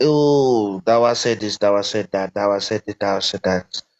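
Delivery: ordinary delivery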